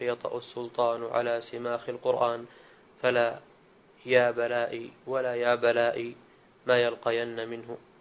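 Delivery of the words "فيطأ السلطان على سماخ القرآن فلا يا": plain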